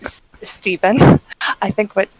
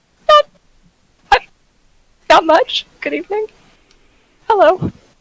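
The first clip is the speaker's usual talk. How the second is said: put-on character voice, much higher pitch; 11 semitones higher, 3 dB louder than usual. Player voices Yvette answering another character's greeting, in Yvette's very high voice. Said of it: "in a very high voice".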